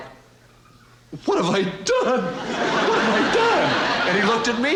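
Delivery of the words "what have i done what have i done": high, far-off, guilty-sounding dog voice.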